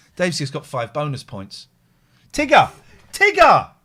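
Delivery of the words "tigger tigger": very high, shrill, loud yell. Calling out an answer in a word game: shouting. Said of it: "Why are you shouting Tigger at me now?".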